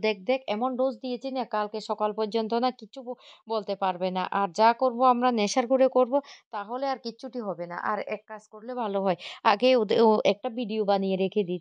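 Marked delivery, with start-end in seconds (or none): none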